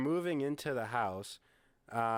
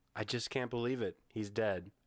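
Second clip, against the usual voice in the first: mock flat line delivery; 3 semitones lower than usual. Retelling how an actress delivered a line, imitating her flat delivery. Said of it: "In that tone".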